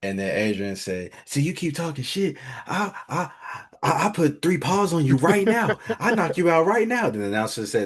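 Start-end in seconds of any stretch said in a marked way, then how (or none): 1.3-7.1 very high, taunting, trash-talking voice. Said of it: "he was just talking junk to".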